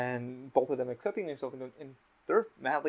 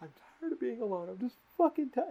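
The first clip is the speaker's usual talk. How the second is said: mock full-on bawling, much higher and faster; 11 semitones higher than usual. Retelling how he started crying, the speaker imitates him full-on bawling. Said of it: "he's fucking full on bawling".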